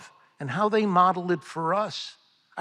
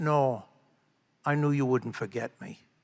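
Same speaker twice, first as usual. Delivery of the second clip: put-on low-pitched Pennsylvania Dutch accent; 5 semitones lower, 4 dB quieter than usual. Quoting a man the speaker visited, in a Pennsylvania Dutch accent. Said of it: "in that Pennsylvania Dutch accent".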